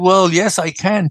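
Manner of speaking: ordinary delivery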